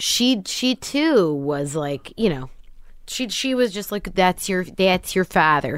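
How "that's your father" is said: put-on Midwestern, Minnesota-sounding accent. Telling a listener what her mother said to her, imitating mother's midwestern accent. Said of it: "that's how she talks too".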